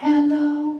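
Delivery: high, squeaky-sounding "hello", pitched way up. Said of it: "When my voice goes up high sometimes".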